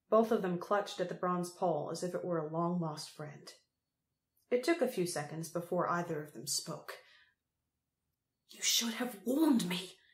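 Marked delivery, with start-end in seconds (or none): 8.5-9.9 words hissed through the teeth. Crow, still squinting against the sun, speaks to a companion, hissed. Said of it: "hissed Crow".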